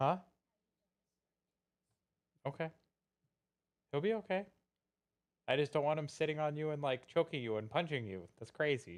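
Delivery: quiet off-mic scolding tone.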